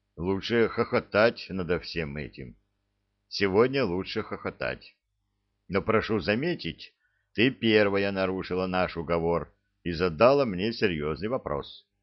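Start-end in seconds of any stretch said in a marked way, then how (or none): none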